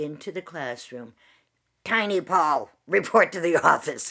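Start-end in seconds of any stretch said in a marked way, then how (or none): 1.8-4.1 put-on intercom announcement voice, louder. Retelling the principal calling a student over the intercom: Mister Pierce intercom voice. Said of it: "this voice would come over the intercom".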